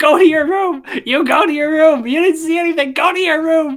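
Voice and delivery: acted angry yelling, very high, loud. Speaker retells Dan ordering them to their room; imitating Dan's angry yelling. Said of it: "he just starts to yell and scream".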